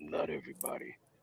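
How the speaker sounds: hushed, soft, disappointed-father voice. Retelling a commentator's reply: Booker T like a disappointed father. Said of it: "Book says it like a disappointed father".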